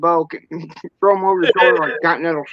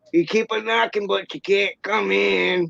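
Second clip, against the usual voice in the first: hazy, creaky, rough stoner voice, slow drawn-out drawl; 2 semitones higher, 5 dB quieter than usual. Retelling a movie scene where Chong talks to a cop: Chong impression. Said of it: "that was a good impersonation".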